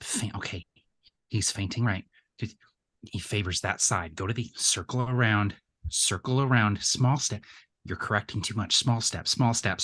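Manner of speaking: barely audible, hushed mutter under the breath. Coaching a fighter through his moves while watching: muttering under his breath. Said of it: "sort of speaking under his breath".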